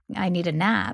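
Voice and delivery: ordinary talk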